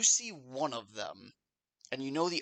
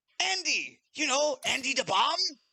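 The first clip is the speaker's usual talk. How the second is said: voice jumps up, raised and very high; 12 semitones higher, 5 dB louder than usual. Voicing a talking severed head introducing itself: raised voice. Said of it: "his voice raises at that".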